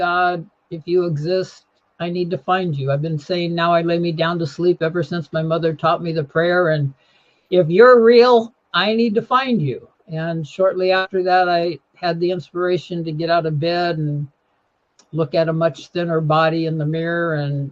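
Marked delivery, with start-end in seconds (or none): none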